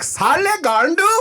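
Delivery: very high-pitched put-on Indian accent. Recalling shame about where they were from, quoting someone in a put-on Indian accent. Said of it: "It's so hard to do that accent very accurately".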